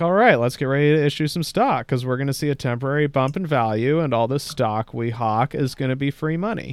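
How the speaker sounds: ordinary delivery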